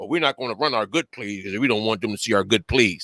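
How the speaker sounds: low, mock timid coach voice.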